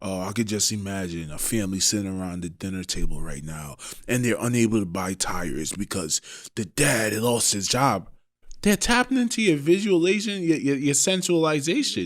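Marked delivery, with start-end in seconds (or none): 0.0-8.1 mock very low, grave, hushed, somber voice. Retelling what someone said on a podcast, imitating a somber tone. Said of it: "he got into this like real somber tone".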